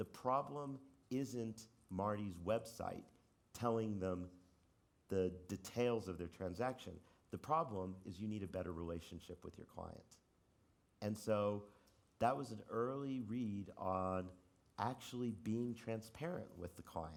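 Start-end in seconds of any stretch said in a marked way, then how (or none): none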